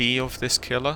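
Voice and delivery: ordinary talk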